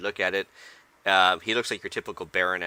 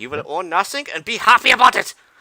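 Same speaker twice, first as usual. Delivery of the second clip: put-on German accent, high, shrill and loud; 12 semitones higher, 10 dB louder than usual. Quoting a line from a teaser video: imitating a German accent. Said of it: "with the German accent".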